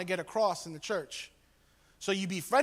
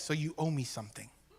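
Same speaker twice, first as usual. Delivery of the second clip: low, quiet mutter under the breath; 4 semitones lower, 5 dB quieter than usual. Retelling a TV character's line, said under his breath. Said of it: "under his breath".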